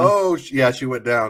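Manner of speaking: ordinary delivery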